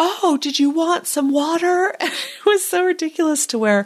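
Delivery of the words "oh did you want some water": mock bellowing, loud shouting. Recounting a man who couldn't hear shouting back, imitating him shouting. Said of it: "he's literally shouting back".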